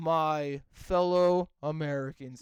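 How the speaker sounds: put-on flat, unenthusiastic voice. Mocking a bad voice-acted president line: imitating Keemstar's unenthusiastic delivery. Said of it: "talked in your normal voice and sounded as unenthusiastic as possible".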